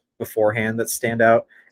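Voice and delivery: ordinary talk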